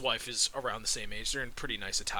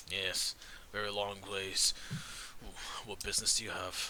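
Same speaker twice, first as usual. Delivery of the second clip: put-on dwarf voice, lower and quieter; 3 semitones lower, 4 dB quieter than usual. Voicing a dwarf guard looking a visitor up and down: voicing a dwarf guard. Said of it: "he's a dwarf".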